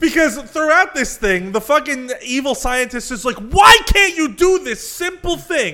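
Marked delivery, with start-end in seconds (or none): 3.4-5.7 high, loud screaming. Recapping Genocyber, acting out the evil scientist imitating the scientist screaming. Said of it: "And he's like screaming at him".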